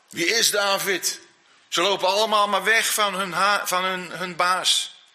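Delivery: plain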